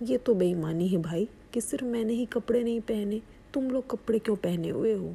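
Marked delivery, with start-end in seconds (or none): none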